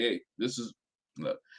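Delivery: put-on quiet bass voice. Talking about Justin acting once the cameras were off: Justin's voice with added bass. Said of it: "Justin got a little bass in his voice".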